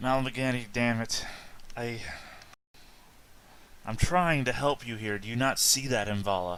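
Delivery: weary, fed-up sighing. Voicing a character who sighs, hand against the wall: exasperated sigh. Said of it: "she'll sigh, and she'll put a hand against the wall and say".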